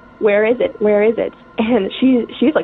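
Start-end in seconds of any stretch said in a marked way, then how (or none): none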